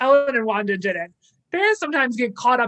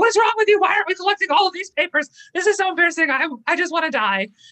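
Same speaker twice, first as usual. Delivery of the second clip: high, loud exasperated outburst, boiling over. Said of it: "And Sam was like".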